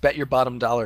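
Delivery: normal talking voice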